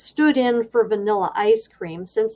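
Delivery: ordinary delivery, nothing marked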